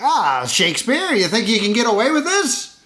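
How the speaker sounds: thirties hoodlum style. Complaining about a character's way of talking, Ripley as 1930s gangster. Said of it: "talk like a nineteen thirties gangster".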